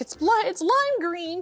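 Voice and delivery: acted tearful pleading voice. Retelling begging staff at the airport about a lost bag, retelling a crying plea. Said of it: "I'm crying, I'm emotional, and I am begging".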